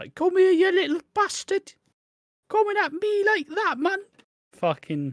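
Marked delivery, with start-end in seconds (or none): 0.1-4.0 put-on angry, loud, very high-pitched voice with northern English accent. Discussing a TV scene, a speaker imagines a mum fighting a henchman: northern mum voice. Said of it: "a proper northern mum".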